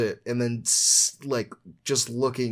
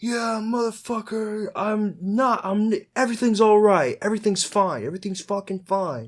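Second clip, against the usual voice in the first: mock enraged screaming, very high-pitched, furious; 9 semitones higher than usual. Retelling a man screaming at people offering him help, retelling someone screaming. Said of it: "he's like screaming like".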